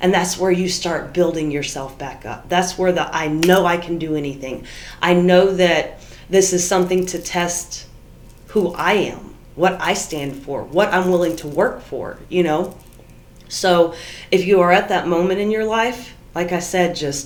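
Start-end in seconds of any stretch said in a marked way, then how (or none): none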